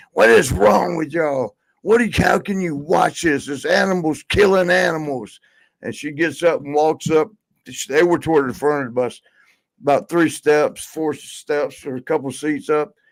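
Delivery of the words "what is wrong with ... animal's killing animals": put-on upset, accusing, scolding angry outburst. Retelling how a bus passenger screamed at everyone: imitating Sonny screaming. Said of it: "and screams".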